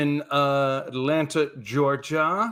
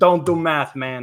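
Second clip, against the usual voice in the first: put-on Brooklyn accent; 3 dB louder than usual. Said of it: "I don't know the Brooklyn accent".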